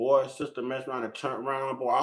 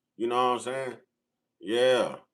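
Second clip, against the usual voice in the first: plain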